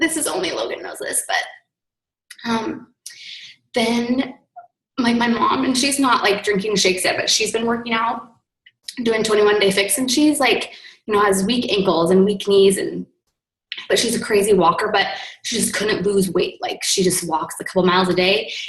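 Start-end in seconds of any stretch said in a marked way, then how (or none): 0.0-16.6 voice close to breaking into crying. Sharing news about their mom, the speaker warns they are about to cry: on the verge of tears. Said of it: "now I'm going to cry".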